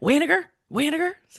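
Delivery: put-on angry tone. Showing how an ex said to pronounce a name, said mock-angry. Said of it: "Say it like you're mad".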